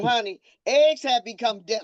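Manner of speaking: usual speaking voice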